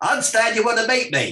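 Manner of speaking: forthright and direct, pitched very high. Retelling how a businessman arrived and greeted him: Alan Sugar impersonation. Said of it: "I'll try and do an impersonation".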